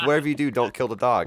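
high, panicked, frantic freaking-out voice. Retelling a friend's warning during a Minecraft game: imitating a friend freaking out. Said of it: "freaking out".

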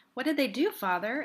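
cool and composed. Judith, across the table, questions her father: coolly. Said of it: "Inquired Judith coolly".

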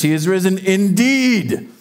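acted, slow, fervent delivery with full conviction. Recalling his one line to say in church, retelling saying it with conviction. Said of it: "I'm going to say it like I mean it".

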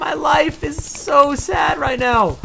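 very high, loud voice that cracks. After talking all day, the speaker records after school: voice cracking. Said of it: "my voice is cracking".

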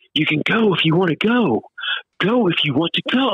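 play-acted, high, full-throated yelling at top volume. Retelling what a woman started shouting in a dingy basement, imitating a woman shouting. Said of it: "she starts shouting".

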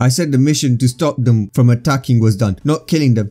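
ordinary delivery

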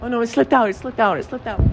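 high, mocking, mock-innocent whine.

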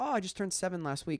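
ordinary talk

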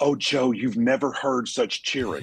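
high-pitched, gushing, joyful excitement. Retelling a story about a wife back from a trip: imitating gushing excitement. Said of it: "she's just gushing about the joy".

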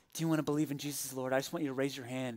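very quiet, very low, hushed half-whisper. Retelling Peter ending his sermon down on one knee, imitating Peter half-whispering. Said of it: "he began to speak in a whisper".

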